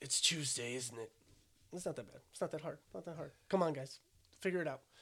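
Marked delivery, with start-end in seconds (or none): 0.0-1.1 low, put-on British accent. Challenged to do a British voice, repeating the other speaker's attempt, British accent. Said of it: "Do a British voice".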